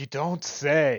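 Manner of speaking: slow, drawn-out, mock-surprised and mock-shocked tone.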